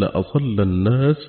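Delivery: ordinary delivery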